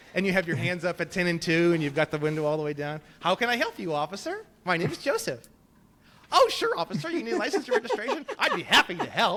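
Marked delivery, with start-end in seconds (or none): 3.2-9.3 put-on old-fashioned 1950s-style polite voice. Showing how to talk to a police officer at a traffic stop, in a 1950s-style polite voice. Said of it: "like a nineteen fifties kind of thing".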